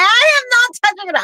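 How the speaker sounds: very high, shrill, piercing scream. Retelling refusing to touch a crab on the foot: imitating own screaming. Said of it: "I'm screaming".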